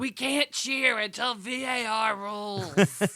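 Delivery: put-on very slow, stretched-out, high-pitched call. Retelling a yell at Sam during the match: retelling own yell. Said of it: "I'm yelling at Sam".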